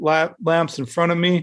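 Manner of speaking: ordinary talk, nothing marked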